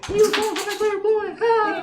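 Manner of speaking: tiny, squeaky, very high little insect voice. Describing what a character says while running up screaming, in a little insect voice. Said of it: "like in a little insect voice".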